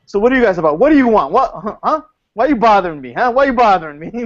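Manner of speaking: mock-hostile tone. Showing how to treat visitors at a convention table, mock belligerent. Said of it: "be more belligerent to people".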